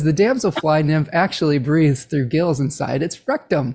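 normal talking voice

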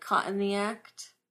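terrible, bad put-on Australian accent. Explaining a name's pun in a terrible australian accent. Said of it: "That was my terrible Australian accent, which was more British than anything".

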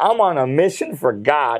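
normal talking voice

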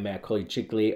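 ordinary delivery

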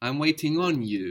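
normal talking voice

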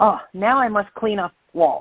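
put-on broad, heavy Japanese accent laid on thick. Retelling the other instructor's remark to the students, in a thick japanese accent. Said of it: "with his thick Japanese accent and says".

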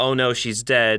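plain

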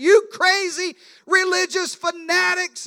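loud, drawn-out, high-pitched yell. Retelling a joke about a driver speeding past: imitating someone yelling. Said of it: "he yells out".

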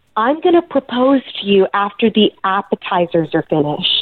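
put-on whisper. Retelling what a date whispered at a family party: imitating a whisper. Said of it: "whispers in my ear".

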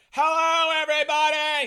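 blaring nasal bellow, pitched very high. Imitating how he greeted everyone on day one: loud nasal voice. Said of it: "He had this really loud nasal voice".

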